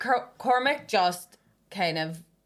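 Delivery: ordinary delivery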